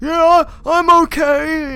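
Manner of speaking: very loud, very high put-on guy voice. Speaker imagines how the girl character would talk: Mary Jane's fake guy voice. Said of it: "she would put on a guy voice and be like".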